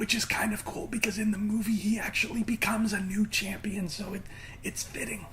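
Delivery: hushed whisper, barely voiced, very soft. Speaker talking about a movie, whispering. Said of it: "I don't know why I'm whispering".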